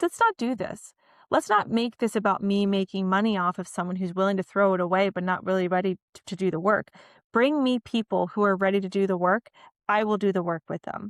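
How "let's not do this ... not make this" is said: plain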